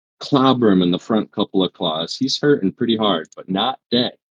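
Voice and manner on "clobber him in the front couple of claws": usual speaking voice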